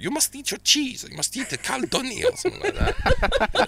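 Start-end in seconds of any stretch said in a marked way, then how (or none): 0.0-2.2 put-on grandmother voice. Recalling the voice of a grandmother from Latvia: imitating Latvian nan's voice. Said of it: "I can just hear her going".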